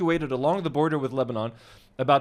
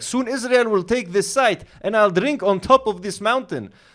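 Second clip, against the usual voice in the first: put-on Israeli accent; 5 semitones higher, 5 dB louder than usual. Read out a comment left on a video of skiing in Lebanon, in a put-on Israeli accent. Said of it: "What's that accent?".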